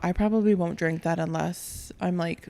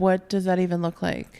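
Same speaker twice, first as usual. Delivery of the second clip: ordinary talk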